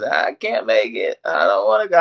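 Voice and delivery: put-on tearful baby-style sobbing with swooping pitch. Retelling how she cried a mile into the run; imitating someone crying. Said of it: "she's crying like a baby".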